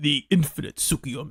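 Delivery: low, deep, dropped villain voice. Recapping a scene, the speaker attempts Madara's low voice. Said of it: "I can't do Madara's low voice".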